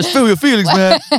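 high, loud, mock cross voice. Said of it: "in that really cross voice".

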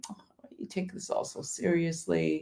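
soft, hushed whisper. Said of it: "Satan starts to whisper".

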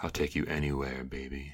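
sexy, sultry, seductive put-on radio-host voice. Answering a remark about a sexy voice, using a sexy radio voice. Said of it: "Just in that sexy voice, right?".

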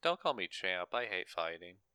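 soft, casual, offhand throwaway delivery without drama. Describing how another person says the line, speaker acts it out: retelling a casual delivery. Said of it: "He says it much more casually".

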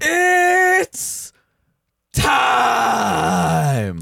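stretched-out, high, rough voice. Announcing to the others that it is time: Bruce Buffer impression. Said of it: "That was my best Bruce Buffer".

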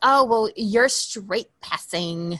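put-on catty, bitchy high school cheerleader voice

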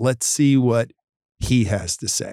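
very slow, deliberately dragged, drawn-out delivery. Retelling how a team member answers a cancelling patient: imitating someone speaking very slowly. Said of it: "they say it very slowly".

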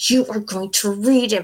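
mock-threatening voice through clenched, gritted teeth. Speaker recalls a woman threatening them into reading, imitating talk through clenched teeth. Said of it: "speak through her clenched teeth".

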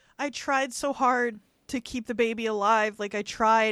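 normal talking voice

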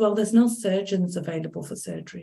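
bone-dry, flat, expressionless deadpan delivery. Retelling what a woman told the speaker at their second meeting, imitating a deadpan tone. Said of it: "like really deadpan".

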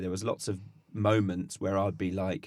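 ordinary talk

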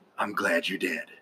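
put-on villain voice, pitched low. Reacting to a film character's death, in Jack Nicholson's Joker voice. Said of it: "in the voice of Jack Nicholson's Joker from Batman 1989".

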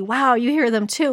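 plain

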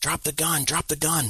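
mock, high screaming. Retelling a man's story of confronting someone holding a gun, retelling a scream. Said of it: "I'm screaming at this guy".

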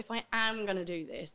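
ordinary talk

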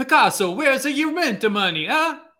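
put-on Italian accent. Redoing the italian landlord bit from the panel: italian landlord impression. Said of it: "my Italian Pablo Picasso landlord impression".

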